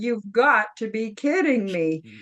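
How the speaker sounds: normal talking voice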